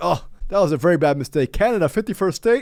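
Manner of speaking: mocking, half-laughing scoff. Mocking a podcast host who laughs at bad news: imitating Joe Rogan laughing. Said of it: "Rogan right now is literally just laughing".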